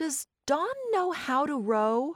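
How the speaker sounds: suspicious, wary tone. Reading a story aloud, one character asks the narrator a question, suspicious. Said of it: "Anne said suspiciously".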